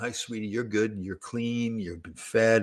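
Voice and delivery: soft-spoken, hushed. Grandpa retelling what he said to her to help her relax, talking softly. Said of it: "I'm talking softly".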